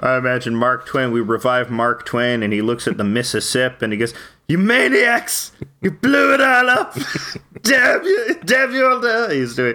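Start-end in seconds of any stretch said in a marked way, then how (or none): 4.5-9.3 very high-pitched, declaiming delivery. Imagining a revived Mark Twain at the Mississippi: Charlton Heston impression. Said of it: "a perfect Charlton Heston impression".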